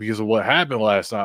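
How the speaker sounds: normal talking voice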